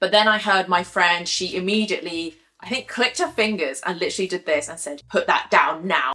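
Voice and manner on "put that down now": put-on very stern, firm, no-nonsense raised voice. Retelling a friend ordering a thief to drop a bag: imitating a very stern voice. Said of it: "in the most sternest voice".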